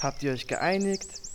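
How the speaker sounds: low talking-horse voice.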